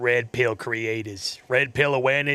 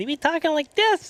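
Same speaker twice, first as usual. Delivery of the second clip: very high, swooping, tiny little voice. Explaining the voice chosen for a tiny-headed character, the speaker demonstrates a high-pitched voice. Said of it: "I just went with a higher pitched one".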